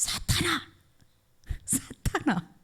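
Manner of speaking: high-pitched, drawn-out, stretched cry.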